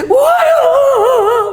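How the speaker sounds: high, slow, drawn-out sobbing cry.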